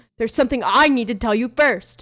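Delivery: loud booming delivery.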